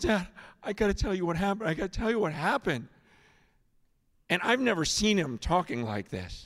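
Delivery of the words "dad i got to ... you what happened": put-on overwhelmed rushed speech, much faster. Retelling his son's FaceTime call from camp, imitating son too overwhelmed to talk. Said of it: "he can't even talk".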